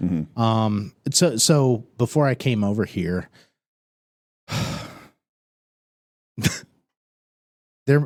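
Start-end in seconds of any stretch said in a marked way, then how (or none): 1.1-8.1 voice getting teary, on the verge of tears. Talking with two others about this, the speaker starts to tear up. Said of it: "I'm I'm starting to tear up".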